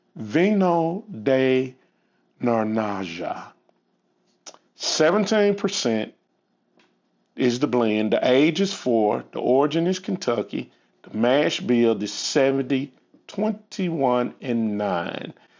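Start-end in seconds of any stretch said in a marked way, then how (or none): 0.2-3.5 slow, careful, deliberately drawn-out enunciation. Reading out a blend's details, saying its name: said slowly. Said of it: "I'm going to say it slow".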